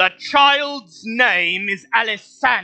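booming, very high-pitched bellow. Voicing Mister Stick announcing to everyone in the room: bellowing. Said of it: "Mister Stick bellows".

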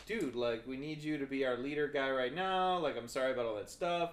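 ordinary talk, nothing marked

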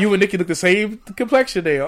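usual speaking voice

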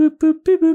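mimicked beeping ringtone, very high and loud.

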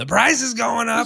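put-on high yell.

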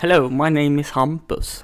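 English with half-Jämtland Swedish accent. Imitating own english spoken with the children: english with half-jämtland swedish accent. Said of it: "halvjämtländska dialekten och svenska uttalen".

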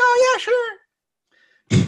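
put-on very high, shrill, grating, annoying voice. Retelling a story, doing an impression of how annoying Sally sounds. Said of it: "That was my impression of how annoying she is".

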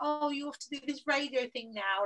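mocking, teasing tone, slightly high pitch. Retelling how former coworkers reacted to the notice: imitating someone mocking. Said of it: "like, mocking me".

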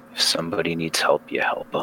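hushed, whispered mutter under the breath. A game master voices Jeremiah as a girl claws at his back, muttering under his breath. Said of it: "say under his breath".

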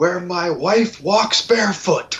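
put-on cold, intense, menacing tone. Retelling quoting The Godfather to a cat: threatening Michael Corleone yelling. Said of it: "quoted The Godfather to your cat in a threatening manner".

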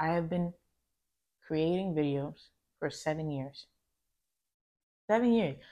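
choked up, voice breaking, about to cry. Speaker reflecting on seven years of creating videos, on the verge of tears. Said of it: "I feel like I'm going to cry right now".

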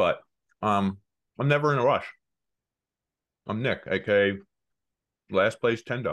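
speaking with food in mouth. A show co-host introduces himself while eating, talking while chewing. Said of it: "Sorry, I'm chewing".

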